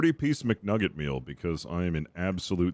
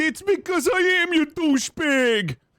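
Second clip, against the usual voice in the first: very high, loud, put-on Swedish accent; 7 dB louder than usual. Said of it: "Goes like a Swedish guy from Death Clock".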